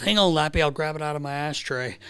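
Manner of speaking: ordinary talk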